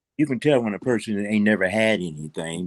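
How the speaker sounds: ordinary delivery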